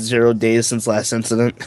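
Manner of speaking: ordinary delivery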